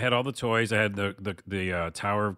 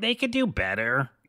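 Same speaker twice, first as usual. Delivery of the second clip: put-on high, nerdy ten-year-old know-it-all voice; 5 semitones higher than usual. Speaker recalling what he thought at age ten, in a nerdy kid voice. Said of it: "Kid voice".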